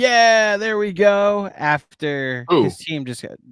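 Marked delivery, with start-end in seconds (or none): 0.0-1.5 sarcastic, loud, high-pitched yell. Retelling what Jared Allen screamed after his team scored against: imitating Jared Allen's sarcastic scream. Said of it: "He was just screaming like".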